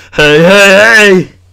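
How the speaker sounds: loud, high-pitched repeated call. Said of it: "Fat Albert".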